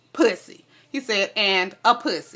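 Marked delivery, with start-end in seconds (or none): none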